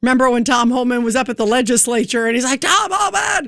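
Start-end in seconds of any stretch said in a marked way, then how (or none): 2.6-3.5 acted-out, madman-like, high-pitched screaming outburst. Retelling an assembly member screaming at Tom Homan: imitating Zohran Mamdani screaming. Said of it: "he was screaming at Tom Homan".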